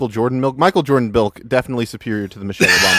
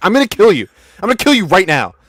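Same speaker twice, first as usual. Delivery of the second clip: acted, furious, loud, high fifteen-year-old outburst; 6 semitones higher, 5 dB louder than usual. Imitating another speaker as a teen at the lunch table: imitating an angry fifteen-year-old. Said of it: "a fifteen-year-old sitting at the lunch table".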